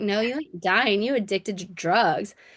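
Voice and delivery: ordinary delivery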